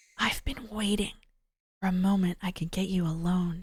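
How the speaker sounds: hushed, low voice. Tanaka finally gets Asawa alone and speaks to him in a hushed voice. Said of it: "He spoke in a hushed voice".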